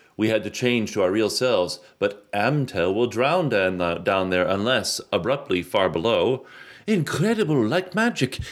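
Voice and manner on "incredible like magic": very high-pitched put-on French accent. Reading a story aloud, a character's exclamation in a French accent. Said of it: "does he have a French accent?".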